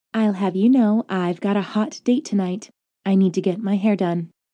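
syrupy, sweetest sugary tone. A woman speaks to a man while holding a hovering sheet at his jugular, sweetest voice. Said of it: "she explained in her sweetest voice".

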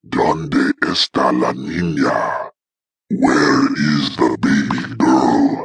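crackling voice pitched very deep. Reading a story aloud, voicing someone behind him in the dark, crackly low-pitched voice. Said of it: "a crackly, low pitched voice".

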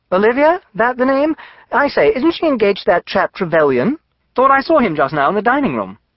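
bright, breezy, cheerful, very high chatter. A companion chats about the listener's cousin and her fiancé; cheerful. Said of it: "Stubbs said cheerfully".

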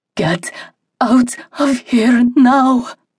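loud desperate whisper. After scanning the room, a woman leans over the table, loud desperate whisper. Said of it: "she whispered loudly".

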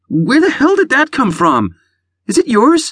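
pained, very high, swooping accusing tone. Reading a character who just stubbed her toe on a bag, accusing. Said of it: "she accused".

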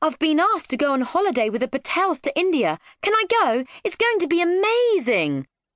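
high eager excited yelling. Narrating a story, a girl runs home to her parents, yelling excitedly. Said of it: "she yelled as she ran into the house".

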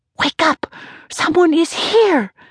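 hissing. Casey tries to wake her husband, who says she is dreaming: hissed. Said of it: "she hissed".

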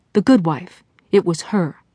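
plain

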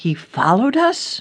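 with a gasp. As a detective explains the man knew where she lived, gasping. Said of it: "Ellie gasped".

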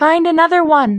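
very high, curt, sharp and snappy. Nell speaks to Quill during the climb, snapping. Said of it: "Nell snapped at Quill".

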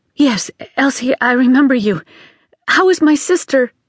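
anxious, urgent, pressing tone. Reading a phone call scene, a woman answering the maid, urgent. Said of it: "she asked urgently".

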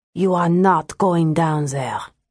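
low and surly voice. Narrating a story, a voice stops Ingrid in the darkness, low, surly voice. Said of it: "She paused at the low, surly voice".

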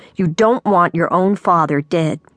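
ordinary delivery

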